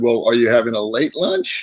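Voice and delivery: cheeky sarcasm with wide pitch range.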